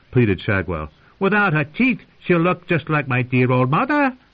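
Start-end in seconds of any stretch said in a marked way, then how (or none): 1.2-4.2 very high, loud, gleeful-sounding cackling. Shadwell urges Rorg on; cackling. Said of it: "he cackled".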